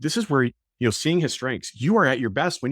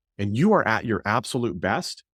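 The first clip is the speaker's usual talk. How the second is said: ordinary talk, nothing marked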